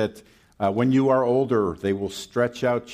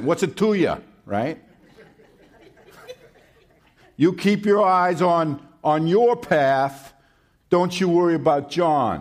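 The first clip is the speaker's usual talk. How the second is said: put-on New York accent, pitched a bit high; 6 semitones higher, 3 dB louder than usual. Speaker retelling a Bible passage, voicing Jesus with a New York accent. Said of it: "with a kind of a New York accent".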